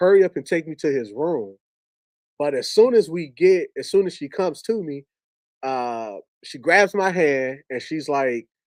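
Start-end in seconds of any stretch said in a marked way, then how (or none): none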